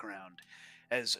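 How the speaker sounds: plain reading voice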